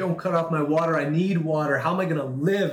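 sobbing, tearful, begging voice. Retelling a woman's plea to a worker cutting off water: imitating someone crying. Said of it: "and she's crying".

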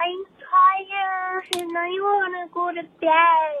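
put-on very high childlike toddler voice, drawn-out bed. Telling a prom story, voicing the speaker's inner toddler in a toddler voice. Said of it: "my inner toddler came out and I'm like".

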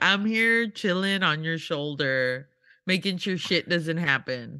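ordinary delivery

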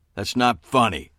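cutting sharp tone. When others chuckle at a joke, the homicide detective objects, speaking sharply. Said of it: "spoke sharply to Deirdre".

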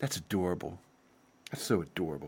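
very quiet, low, patronizing tone. Mocking what the other person says when condescending, mock-condescending tone. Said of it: "what's that thing you say when you're being condescending?".

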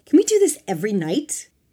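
loud, high-pitched yell. Replying to a companion in the group, a character is shouting. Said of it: "Tiffany shouted".

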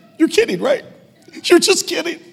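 mock crying and laughing at once. Retelling a child's reaction to news of a pet's death: imitating crying while laughing. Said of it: "he started crying, but, but laughing".

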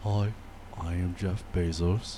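deadpan, droning delivery, low and level. Imitating Jeff Bezos introducing himself, monotone Jeff Bezos impression. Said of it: "I feel like it's more monotone. Like".

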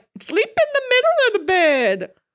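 very high, loud, swooping sing-song voice. Imitating someone who has never been single giving bed advice: imitating a never-single person. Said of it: "someone who has never been single being like".

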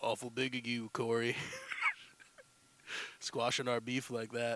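very low, deep, rumbling delivery. Trying out an impression after debating it: Sam Elliott impression. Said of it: "try my Sam Elliott impression".

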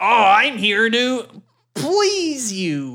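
high, very slow, drawn-out delivery. Doing an impersonation of Rob Schneider for a joke: Rob Schneider impersonation. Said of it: "Was that your best Rob Schneider impersonation?".

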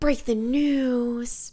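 put-on slow, breathy voice, every word dying off.

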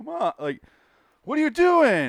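very high, loud, try-hard hammy overacting. Retelling how an actor in the episode tried too hard: imitating an overacting actor. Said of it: "Christopher Reeves trying way too hard".

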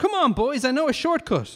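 very high, bright, chirpy voice. Philip, one of the dads, speaks to his family after the show, chirpy. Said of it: "chirped his other dad".

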